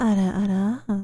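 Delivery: odd slip, voice going weird and out of control. Streamer whose throat is tired from talking a while, voice going weird. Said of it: "my voice went weird there".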